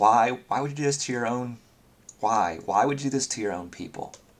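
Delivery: earnest, innocent, begging, pleading tone. Voicing a character questioning a captive: pleading. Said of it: "she's looking at him with pleading".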